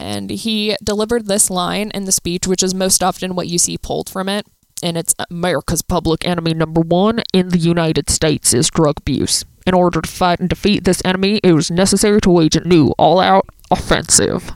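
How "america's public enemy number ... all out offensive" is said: loud, declaimed, proclaiming oratorical speech delivery. Quoting a line from a president's speech: Richard Nixon impression. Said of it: "I don't actually really know what his voice sounds like, but I'm gonna say it's something like that".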